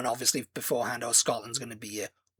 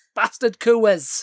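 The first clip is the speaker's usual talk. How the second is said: very high, very loud put-on Scottish accent; 10 semitones higher, 11 dB louder than usual. Repeating a fan's complaint about beer prices: imitating a scottish accent. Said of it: "you're doing a Scottish accent".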